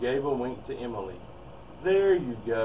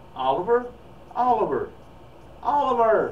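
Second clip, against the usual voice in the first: very high, shrill, loud, repeated shouting; 10 semitones higher, 5 dB louder than usual. Narrator reads Mom, Dad, and Emily calling for Oliver as they run upstairs, shouting. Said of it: "Shouted Mom, Dad, and Emily".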